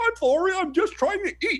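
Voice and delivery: very high, squeaky, silly hand-puppet voice. Speaker retells answering teachers who yelled at lunch, talking as a puppet. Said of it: "I would only talk as a puppet and be like".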